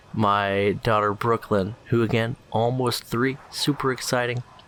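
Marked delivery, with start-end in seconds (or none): none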